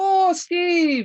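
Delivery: very high, loud yell calling out. Voicing Olivessa as the party returns with the mead, Olivessa yelling out to Steve. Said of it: "she yells out at Steve".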